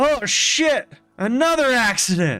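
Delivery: big booming call, pitched very high. Retelling a fire scene with friends, in a booming voice. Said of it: "you hear this booming voice of".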